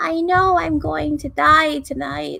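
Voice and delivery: distorted, high, loud witch voice. Describing a recording device and voicing what it plays back, in a distorted witchy voice. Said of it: "distorted by the witch voice".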